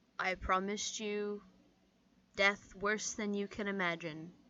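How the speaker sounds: very quiet menacing voice. Voicing a character who leans forward to an enemy: very quiet menacing line. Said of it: "very quietly say".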